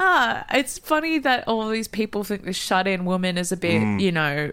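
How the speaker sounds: ordinary delivery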